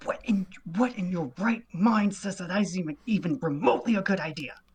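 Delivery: hurried whisper. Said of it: "whispers very de-, like, very hurriedly at him".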